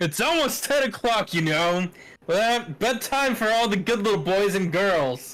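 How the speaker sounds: piercing, irritated voice cutting through the air. Reading a story aloud, voicing a character who was kept waiting; irritated. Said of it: "Taka's irritated voice pierced the air".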